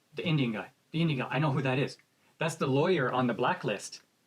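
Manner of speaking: ordinary talk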